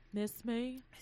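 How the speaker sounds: low voice spoken out the side of the mouth. Quoting a line from Casa in an Olivia impression. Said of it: "what was that line from Casa?".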